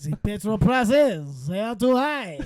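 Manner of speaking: put-on French accent. Asked by another speaker to say a line in a french accent. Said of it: "say the the petrol prices are too goddamn high in a French accent".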